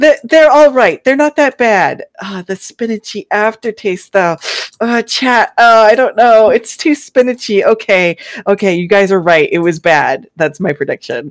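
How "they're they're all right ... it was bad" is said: pitched-up, halting, hedging, grudging voice. Predicting how Luna will react on stream to spinach pancakes: impression of Luna tasting pancakes. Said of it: "that's a really good impression".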